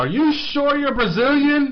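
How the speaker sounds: very high, loud, drawn-out incredulous yell. Retelling what he yelled out in the pub, an incredulous yell. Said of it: "I yelled out".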